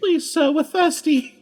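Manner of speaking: high, slow, pleading, begging cartoon voice.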